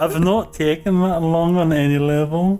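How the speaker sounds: put-on Scottish accent. Answering a question about the game, in a bad Scottish accent. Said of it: "you still can't do a proper Scottish accent".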